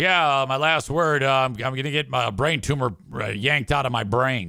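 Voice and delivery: put-on bone-dry, matter-of-fact deadpan delivery. Retelling how Chris K announced his brain tumor: imitating Chris K's dry tone. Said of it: "in his best dry tone".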